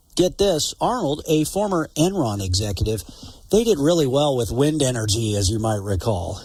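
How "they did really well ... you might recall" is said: dry sarcastic tone, voice dropped low. Reporting on a billionaire donor to a political committee, with a sarcastic tone. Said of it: "You can sense the sarcasm in my voice".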